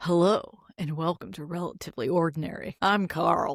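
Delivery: stiff, mechanical, robotic host-style voice. Asked by the co-host to impersonate him, imitating Carl. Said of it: "I'm impersonating you".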